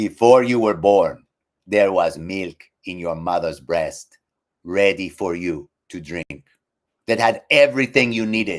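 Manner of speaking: put-on Ghanaian accent. Quoting a man in Ghana, imitating Brother Ishmael's Ghanaian accent. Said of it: "Ghanaian accent, which I'm not gonna do very well".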